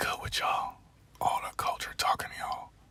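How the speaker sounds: whispering. Greeting your audience at 5 o'clock while outside, whispering. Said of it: "Why am I whispering?".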